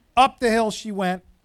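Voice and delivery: ordinary delivery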